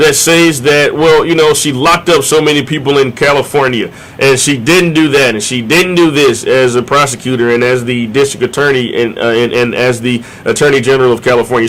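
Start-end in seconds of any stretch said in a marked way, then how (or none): none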